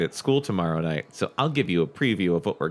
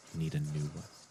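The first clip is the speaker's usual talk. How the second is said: very quiet, low murmur under the breath; 4 semitones lower, 12 dB quieter than usual. Retelling what the eye exam lady said: imitating someone talking really low. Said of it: "talking really low".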